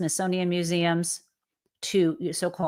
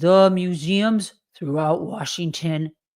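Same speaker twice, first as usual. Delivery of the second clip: silly, stupid, exaggerated mocking caricature voice. Quoting someone's statement about museums, stupid put-on voice. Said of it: "Let me speak in a stupid voice if I can try that".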